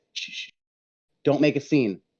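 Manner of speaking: quiet whispering. Playing a character, hushing an old Kenku with fingers over his lips, whispering. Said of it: "I'm just gonna whisper to him".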